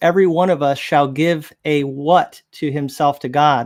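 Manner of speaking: ordinary talk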